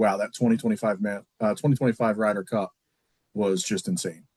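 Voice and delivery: plain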